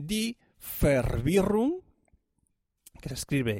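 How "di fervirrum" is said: strong Swiss German accent, pitched up. Pronouncing a German word being explained, with a strong Swiss accent. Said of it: "con acento, bien acento fuerte suizo".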